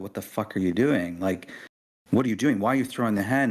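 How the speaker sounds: fast, furious, angry outburst, losing control. Recalling confronting an employee who threw a hen: retelling an angry outburst. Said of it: "I just lost it on the guy".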